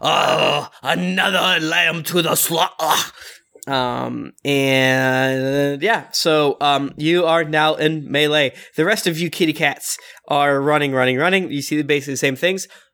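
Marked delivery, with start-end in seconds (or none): 0.0-3.1 wolf character voice. Voicing a wolf with a huge maw turning to a player: voicing a wolf. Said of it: "he turns to you and with a huge maw just goes".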